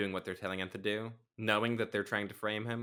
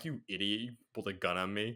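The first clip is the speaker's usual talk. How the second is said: chuckling, amused, dismissive tone. Imitating a movie detective laughing at someone who pulls a gun: chuckling Humphrey Bogart impression. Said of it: "He chuckles and he's just like".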